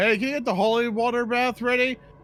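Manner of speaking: very high, shrill yell. Voicing a character yelling to the party to wake them: yelling to the party. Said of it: "me yelling to the party".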